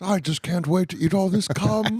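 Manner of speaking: high-pitched cartoon bear voice. Joking with friends, doing a Winnie the Pooh voice. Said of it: "I forgot that you do Winnie the Pooh".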